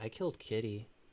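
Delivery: low, quiet mutter, only to himself. Retelling a film scene where the son Jason says a line: imitating Jason saying it quietly to himself. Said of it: "quietly says, like, to himself".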